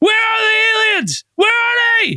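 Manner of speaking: shrill, very high screaming. Retelling a story, imagining Dan turning around in the front seat, imitating Dan screaming. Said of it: "He's just screaming at her like".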